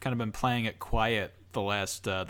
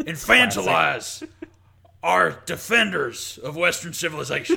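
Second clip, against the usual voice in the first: put-on ranting voice, higher and louder; 6 semitones higher, 6 dB louder than usual. Answering a request to rant about the show: Alex Jones impression. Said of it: "can you do an impression of Alex Jones".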